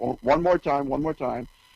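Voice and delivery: normal talking voice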